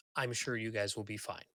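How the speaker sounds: condescending, patronizing, reassuring talking-down tone. Voicing a tiefling woman tapping a guard on the chest: patronizing tone. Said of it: "patronizingly, and she's like".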